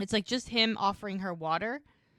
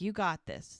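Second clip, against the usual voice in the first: ordinary talk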